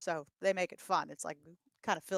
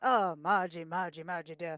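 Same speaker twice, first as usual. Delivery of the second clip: put-on old-time British film-star voice. Explaining to the other speaker who an old film star was, do a Ronald Colman impression. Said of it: "the British star who talks like this".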